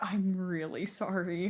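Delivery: barely audible, very soft, muffled mumbling. Retelling how a girl answered when asked if she was okay, imitating someone mumbling. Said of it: "She's just mumbling like".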